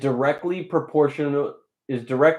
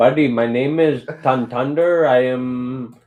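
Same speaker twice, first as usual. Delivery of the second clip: fake Indian accent, louder; 5 dB louder than usual. Asked for an example, the speaker demonstrates: fake indian accent. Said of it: "you'll have an Indian accent".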